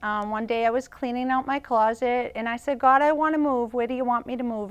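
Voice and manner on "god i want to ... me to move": usual speaking voice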